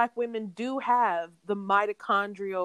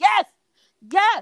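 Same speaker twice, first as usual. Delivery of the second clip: shrill screaming, very high and very loud; 11 semitones higher, 9 dB louder than usual. Recalling hearing her say it on TV, the speaker re-enacts screaming at the TV. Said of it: "I was screaming at the TV".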